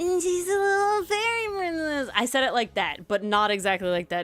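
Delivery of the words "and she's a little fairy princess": put-on high anime girl voice, voice-actress style. Retelling how she said a line to him, speaker uses an anime girl voice. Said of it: "you sound like this anime v- girl voice actor".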